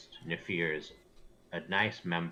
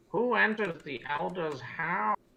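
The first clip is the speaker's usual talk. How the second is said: put-on elderly woman's voice, very high-pitched; 13 semitones higher than usual. Voicing a hunched old woman as visitors enter the elder's house, in an old voice. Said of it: "kind of says in an old voice".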